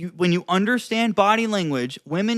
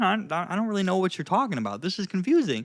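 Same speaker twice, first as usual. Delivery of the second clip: puzzled, confused tone, quick stumbling delivery; 4 dB quieter than usual. Demonstrating different tones of voice to the listener, confused tone. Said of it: "this is like a really like kind of like confused tone".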